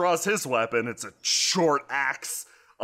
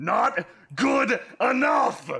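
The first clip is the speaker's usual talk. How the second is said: sudden enraged, furious outburst, pitched very high; 11 semitones higher than usual. A game narrator voices an axe-wielding foe striking back after being hit: furious. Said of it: "He looks suddenly furious and eyes igniting".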